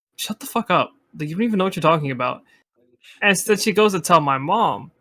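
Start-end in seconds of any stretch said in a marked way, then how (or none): 0.2-2.5 put-on cutting, dismissive, blunt, snapping retort. Retelling telling off a younger girl who freaked out, snapping back. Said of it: "looked at her dead in the face".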